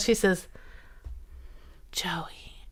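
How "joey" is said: soft, unvoiced whisper under the breath. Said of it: "under her breath".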